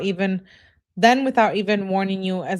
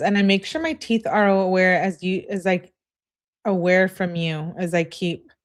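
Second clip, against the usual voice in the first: ordinary talk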